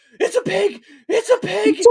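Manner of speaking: very high, very loud, shrill panicked put-on scream. Speaker imagines a video of themselves running out of the woods, mock-scared yelling. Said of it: "scared out of the woods".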